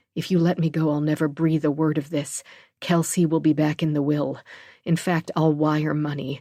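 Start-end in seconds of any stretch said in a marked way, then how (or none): none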